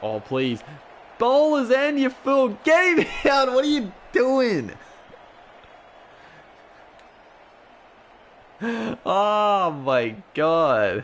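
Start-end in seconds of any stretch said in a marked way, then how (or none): 1.2-11.0 shrill, high, fast, rattled-off shouting. Watching the team's match and reacting to our player's mistake, yelling. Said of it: "Apologies for the the yelling".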